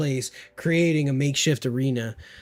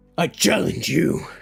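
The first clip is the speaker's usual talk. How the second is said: booming, rough, gruff orc bellow; 4 semitones higher, 4 dB louder than usual. Reading a story aloud where an orc issues a challenge, booming orc voice. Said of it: "The orc boomed".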